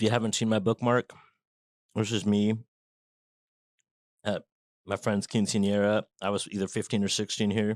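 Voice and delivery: speaking with mouth full, chewing. Talking to viewers about a book, talking with mouth full. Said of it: "I'm gonna talk with my mouth full".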